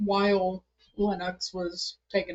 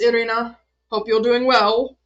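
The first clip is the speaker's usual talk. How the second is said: bright, loud, put-on cheerful voice; 4 semitones higher, 11 dB louder than usual. Playing a character turning away from irina to say goodbye, all happiness. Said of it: "all happiness".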